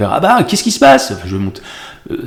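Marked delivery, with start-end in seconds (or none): 0.1-1.1 thin voice jumping up to a very high register. Showing how a crazy role is dubbed high: high-pitched voice. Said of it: "je vais pouvoir partir dans les aigus".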